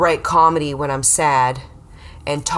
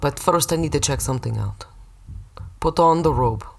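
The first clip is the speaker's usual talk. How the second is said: put-on sketchy Russian man accent. Playing the guy giving results back in a bit: sketchy Russian guy accent. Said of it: "I know you have the Russian accent".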